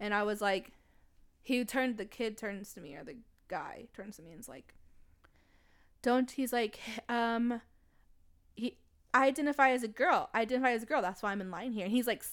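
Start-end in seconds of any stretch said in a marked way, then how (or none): none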